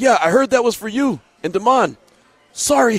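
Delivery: put-on breezy, offhand tone. Retelling what Jesus said when he came into the office, imitating Jesus saying it cool. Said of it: "he said it so cool".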